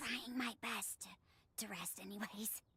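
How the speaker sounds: speaking in a whisper. Answering a visitor while on vocal rest: whispering. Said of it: "You shouldn't be whispering then".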